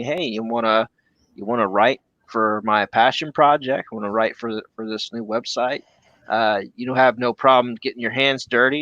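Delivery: ordinary delivery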